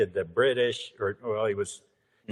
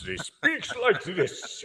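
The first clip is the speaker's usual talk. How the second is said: high, grand, classical theatrical stage voice; 10 semitones higher than usual. Describing the actor being doubled: John Rhys-Davies voice. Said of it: "very deep Shakespearean voice".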